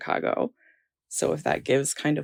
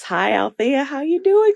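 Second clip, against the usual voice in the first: very high, loud Southern drawl; 10 semitones higher, 6 dB louder than usual. Imitating grandparents greeting someone, in an American Southern accent. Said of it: "all had Southern accents ... they all talk like this".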